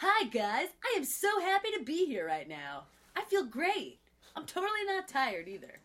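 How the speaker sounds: fake overly cheery voice. Showing a co-speaker how to open the beginning professionally: really fake voice. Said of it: "you need to sound really fake".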